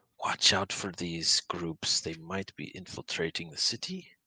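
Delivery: hushed put-on whisper. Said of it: "so he whispers the name of his".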